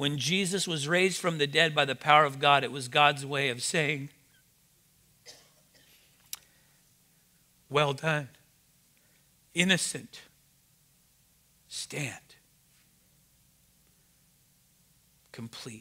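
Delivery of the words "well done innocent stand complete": tearful, weeping delivery, crying through the words. Speaking to the church: crying while speaking. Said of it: "I'm crying already".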